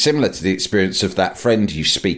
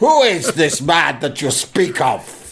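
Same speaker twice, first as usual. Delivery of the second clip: slow, high, medieval-style scolding voice; 5 semitones higher than usual. Joking about a posh phrase, as the Sheriff of Nottingham telling off. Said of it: "like the fucking Sheriff of Nottingham telling me off".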